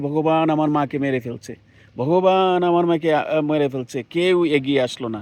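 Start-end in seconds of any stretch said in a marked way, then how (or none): none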